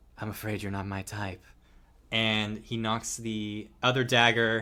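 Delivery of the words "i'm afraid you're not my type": whispered, in a put-on voice. Voicing a character who leans down to a player: whispering in character. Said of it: "kinda whispers in your ear".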